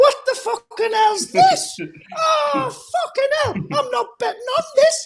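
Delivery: very high-pitched, really camp voice. Retelling a bettor's complaint when cartoon racing comes on, in a camp voice. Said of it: "Really camp voice".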